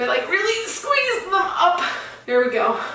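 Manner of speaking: out of breath. Squeezing into tight pants while trying on clothes, the speaker is out of breath. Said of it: "I'm out of breath".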